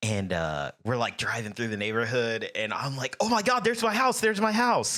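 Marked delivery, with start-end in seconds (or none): 3.2-5.0 very high, put-on thrilled, excited outburst. Retelling pointing out own house to schoolmates: imitating own past excitement. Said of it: "I'm excited".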